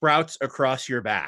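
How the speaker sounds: ordinary delivery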